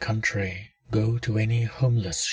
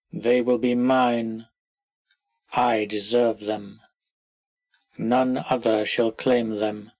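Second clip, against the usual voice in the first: firm, clear, commanding, authoritative declaration. Narrator of an interactive story gives the words to say when the sound stops, clear, authoritative tone. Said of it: "say in a clear, authoritative tone".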